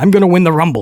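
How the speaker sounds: poorly faked Austrian accent. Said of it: "It's a horrible accent".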